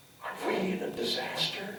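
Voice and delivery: very quiet, high, hushed whisper. Retelling what an actress said before the curtain rose: imitating someone whispering. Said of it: "she leans over to me and she whispers".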